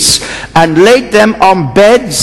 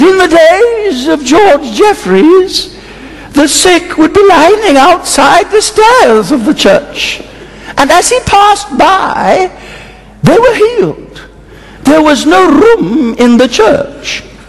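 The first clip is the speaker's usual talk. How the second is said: put-on elderly woman's voice, pitched high; 8 semitones higher than usual. Recounting what a very old lady said, imitating how she spoke. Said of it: "That's how she spoke".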